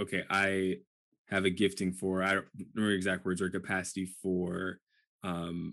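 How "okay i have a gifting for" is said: ordinary talk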